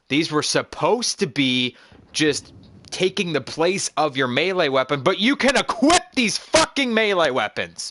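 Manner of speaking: angry fed-up yelling. Playing a game just after reading a weapon description; angry yelling. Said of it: "I'm sorry if I'm yelling".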